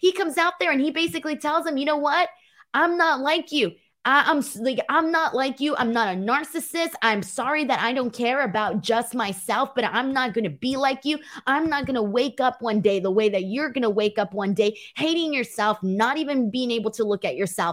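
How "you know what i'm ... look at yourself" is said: ordinary delivery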